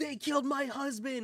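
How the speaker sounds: furious grieving outburst, livid, pitched very high. Recapping a story scene, the speaker voices a widow whose husband was killed: Vereesa Windrunner, mock-livid. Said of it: "she's livid because her husband was killed".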